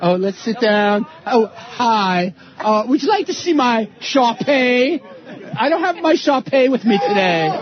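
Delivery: snooty rich-person voice. Mocking people in the Hamptons: snooty rich person impression. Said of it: "his impression of rich, snooty people".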